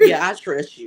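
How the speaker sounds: heavy, grudging, play-acted sarcasm on "yeah". Recalling how they told him they trusted him, retelling a sarcastic 'i trust you'. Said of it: "it was so sarcastically".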